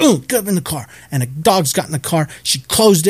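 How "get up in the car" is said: stern, scolding put-on woman's yell. Retelling how a woman yelled at her dog to get in the car, imitating someone yelling. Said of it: "she yelled at him for a little while".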